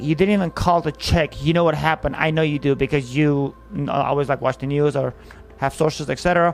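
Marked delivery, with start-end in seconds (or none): none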